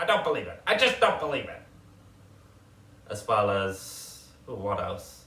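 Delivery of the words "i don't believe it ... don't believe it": classic New York accent, fast and loud. Speaker showing off accents they have picked up, in a New Yorker accent. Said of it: "People seem to like that one as well".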